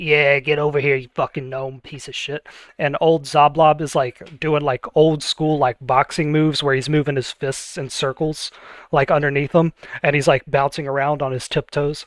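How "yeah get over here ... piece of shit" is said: taunting fighter character voice. A game narrator voices a fighter taunting his opponent: Kickin John voice. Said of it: "he's going".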